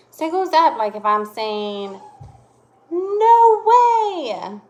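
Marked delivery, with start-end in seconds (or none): 2.9-4.5 very high, very loud, swooping, rising near-yell. Explaining exclamation marks to listeners, rising voice, kind of yelling. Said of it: "my voice went up. I'm kind of yelling".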